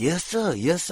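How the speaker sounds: deferential, high voice. Retelling a stranger met while shopping: imitating a servile manner. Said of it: "talks like he's an indentured servant".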